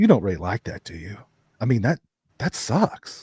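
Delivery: put-on disdainful tone. Retelling what a best friend said about a Michael Myers picture: imitating disdain. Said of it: "he said it with such disdain".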